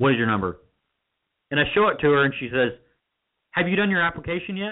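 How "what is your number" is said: dismissive, careless, rude and inconsiderate tone. Retelling how a woman asked for the number: mock-rude, inconsiderate tone. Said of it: "In a very rude, inconsiderate tone of voice".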